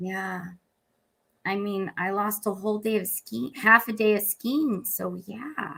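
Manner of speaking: offhand, unbothered delivery, tossed off without concern. Retelling a celebrity's reply about lost skiing: Gwyneth Paltrow voice. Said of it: "you do a good Gwyneth Paltrow voice".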